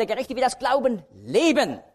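stress on leben.

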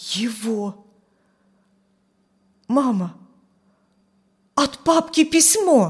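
faltering, halting, breaking voice, drawn-out его. Narrator reads a son crying out to his mother about a letter, in a faltering, breaking voice. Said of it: "сказал прерывающимся голосом".

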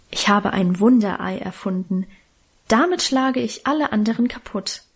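plain

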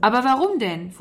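sudden exclaiming burst. A boy questioning his father's order, bursting out. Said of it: "fuhr Walter heraus".

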